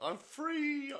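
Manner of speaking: very high, slow, mock joyful squeal.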